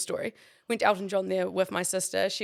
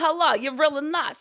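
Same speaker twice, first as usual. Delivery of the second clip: speaking in a put-on Russian accent; 8 semitones higher, 7 dB louder than usual. Speaker recalls how she talked last night; russian accent. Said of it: "I was talking in a Russian accent".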